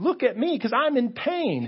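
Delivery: very high, loud, whiny, attention-seeking voice. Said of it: "your toe sends a signal to your brain to say".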